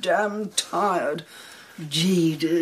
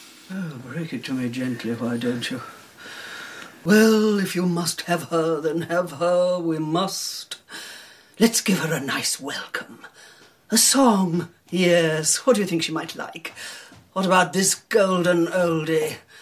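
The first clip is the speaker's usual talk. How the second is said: English-accented put-on voice. Possessed girl speaking as a man: english accent. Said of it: "An English accent".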